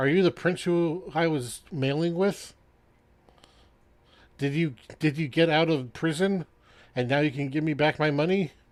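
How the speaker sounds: put-on tipsy, drunk, confused, meandering rambling. In a role-play scene, a drunk man on his porch questions travelers; drunk and rambling. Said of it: "And you see this guy has drunken like 6 of these bottles on his porch. / And you see this guy has drunken like 6 of these bottles on his porch. / burps, and a bubble comes out".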